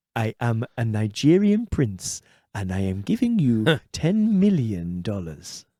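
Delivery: put-on, sing-song Welsh accent. Voicing an example message on a podcast; put-on Welsh accent. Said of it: "That was such a good Welsh accent".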